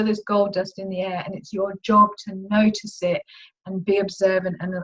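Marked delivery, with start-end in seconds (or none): none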